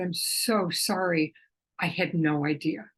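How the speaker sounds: speaking while crying. Recounting an old incident with Nikos, the speaker repeats the apology: retelling a tearful apology. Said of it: "I I started crying".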